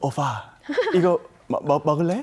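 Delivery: syrupy, sticky, coy, cloying flirtatious voice. Acting out a sign of a joked-about syndrome, mock-flirtatious sticky voice. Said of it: "이렇게 어. 끈적끈적하게 이야기를 한다면".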